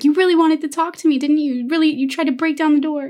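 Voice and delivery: play-acted upset, very sarcastic, high-pitched jab. Retelling how the girl answers her father through the door: imitating Sarah upset. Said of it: "She gets upset and she's like".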